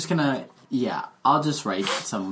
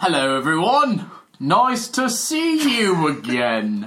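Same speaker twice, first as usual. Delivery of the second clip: put-on loud, swooping gnome wizard voice; 4 semitones higher, 5 dB louder than usual. Greeting everyone as the gnome wizard arriving through the portal: gnome wizard character voice. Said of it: "I'm working on my character voice".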